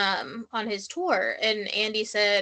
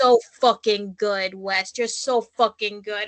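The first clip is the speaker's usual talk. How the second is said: put-on loud, full-on New York accent; 7 dB louder than usual. Retelling how Lindsay talked to West, imitating her New York accent. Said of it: "sound so much like a New Yorker".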